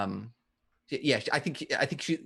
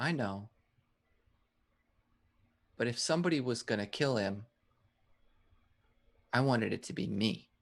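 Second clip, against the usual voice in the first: very small, tiny, shrunken voice; 4 dB quieter than usual. Quoting a character's line from a story, in a very small voice. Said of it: "says in a very, very small voice".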